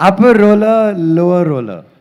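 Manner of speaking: slow, laughing stumble through tongue-twisting words.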